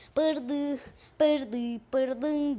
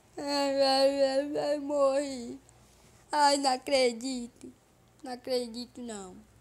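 mock crying and whimpering, much slower. Playing a game on stream just after losing, fake crying. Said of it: "Eu não tô chorando, eu não tô chorando de verdade".

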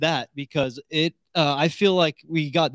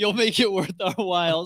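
put-on sarcastic delivery; 2 semitones higher than usual. A podcast co-host repeats a line, quoting it sarcastically.

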